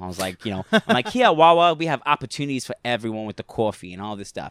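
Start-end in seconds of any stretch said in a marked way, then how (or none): 1.1-4.5 terrible, botched put-on East Coast accent. Retelling the moment she asked him to do an accent, terrible East Coast accent. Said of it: "In, like, an East Coast accent".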